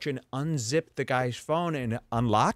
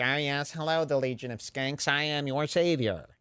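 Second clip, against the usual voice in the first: mocking imitated voice. Mocking a host who locks up phones: imitating Tony Hinchcliffe. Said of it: "I'm sick of Tony being like".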